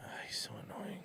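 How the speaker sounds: quiet, under-the-breath whisper.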